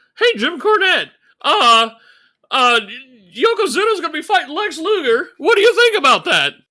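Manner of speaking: squeaky, high-pitched, loud interviewer voice. Recapping a promo, imitating the interviewer questioning Jim Cornette: squeaky Joe Fowler voice. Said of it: "got our squeaky voice Joe Fowler again".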